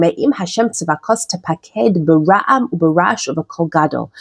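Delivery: normal talking voice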